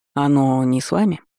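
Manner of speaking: ordinary delivery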